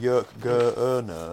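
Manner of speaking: put-on Northern British accent. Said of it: "very Northern Britain".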